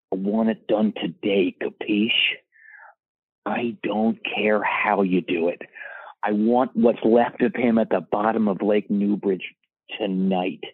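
play-acted menacing, threatening gangster voice. Speaker retells talking into his phone near a man he razzed, mock-menacing phone voice. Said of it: "very menacing into the phone again".

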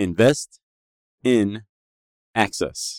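slow, deliberate, measured word-by-word delivery. Speaker repeats a phrase for listeners to write down, said again more slowly. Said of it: "Let me say it again".

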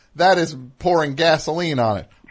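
usual speaking voice

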